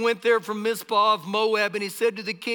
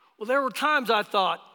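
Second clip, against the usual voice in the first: ordinary talk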